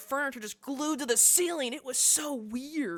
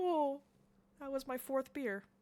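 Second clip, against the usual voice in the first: put-on puppy-like whimper, quieter; 6 dB quieter than usual. Retelling how a drunk guy at the bar reacted, imitating whimpering like a puppy. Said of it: "he's like whimpering like a puppy".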